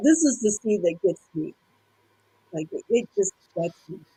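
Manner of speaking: tearful voice, tearing up, choked with emotion. Talking about a favorite movie scene with two others: tearing up. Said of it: "I'm tearing up".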